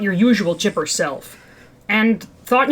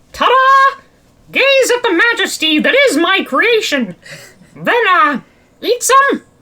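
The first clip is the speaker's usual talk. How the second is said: high, goofy cartoon mouse voice with a goofy flourish; 8 semitones higher, 4 dB louder than usual. Voicing a character proudly presenting his cereal bars: Mickey Mouse voice.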